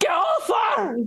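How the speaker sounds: re-enacted scream. Recounting interrupting a serious talk with their girlfriend, retelling a scream. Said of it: "I've just screamed".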